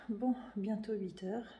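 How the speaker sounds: slow, breathless, out-of-breath whisper.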